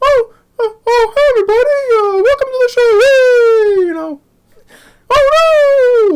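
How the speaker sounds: very high, loud cartoon voice, stretched oh sounds. Show how a guy's voice reminded you of Mister Bill, in a high-pitched Mister Bill voice. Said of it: "that high pitched voice".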